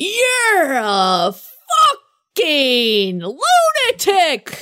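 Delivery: mock very slow, stretched-out, drawn-out mild half yell. Retelling screaming at someone from a friend's arms, retelling a scream. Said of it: "So I'm screaming from her arms".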